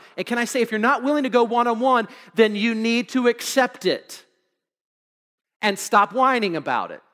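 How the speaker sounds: ordinary delivery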